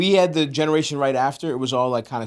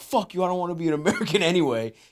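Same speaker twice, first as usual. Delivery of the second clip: mad, exasperated blow-up; 4 semitones higher, 3 dB quieter than usual. Retelling a father's reaction after failing his citizenship test: imitating an angry father. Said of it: "he got mad that they failed him".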